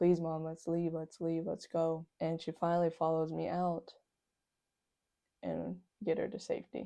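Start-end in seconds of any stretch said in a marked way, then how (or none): 0.0-2.1 acted tearful, crying begging tone. Retelling pulling mom out of a fight: reenacting a crying plea. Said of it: "And I'm, like, crying".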